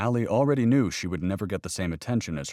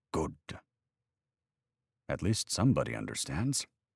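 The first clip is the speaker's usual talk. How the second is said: mock deep Welsh accent, lower, quieter; 4 semitones lower, 6 dB quieter than usual. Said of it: "in his deep Welsh accent".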